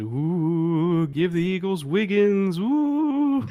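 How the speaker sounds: very slow, high, spooky ghost moan. Quoting someone's betting pick about the Eagles: ghost voice. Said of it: "I think I did my proper ghost voice there".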